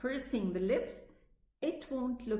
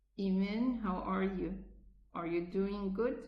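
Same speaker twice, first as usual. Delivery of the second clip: muffled mumble through a locked, still jaw. Imitating how a relative talked as a child: muffled, jaws barely moving. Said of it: "I haven't moved my jaws, so the letters are imprisoned inside the mouth".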